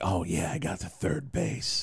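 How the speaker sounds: mock overly sincere, eager, earnest tone. Imitating what high school friends never said: mocking earnest voice. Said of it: "especially not in that voice".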